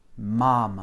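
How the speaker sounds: мама with weight on the first syllable ма. A repeat-after-me language lesson, stress on first syllable of мама. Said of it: "c'est bien la première syllabe qui est accentuée".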